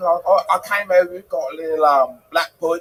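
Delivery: slight put-on, fake Cockney accent. Showing off another accent, the speaker does a little bit of cockney accent. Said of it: "I could do a little bit of Cockney".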